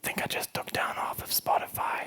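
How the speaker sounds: barely audible, hushed, breathy whisper. Retelling a new engineer's reply after an outage: imitating someone whispering. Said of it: "Why are you whispering?".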